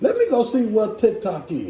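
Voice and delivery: ordinary talk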